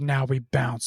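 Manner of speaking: acted, grave, earnest, solemn tone. Retelling a cartoon robot's line on a bouncing ball: imitating a serious tone. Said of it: "all serious".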